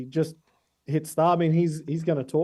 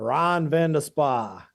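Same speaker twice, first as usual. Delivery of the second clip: put-on very poor South African accent. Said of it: "when I try my worst, uh, South African accent".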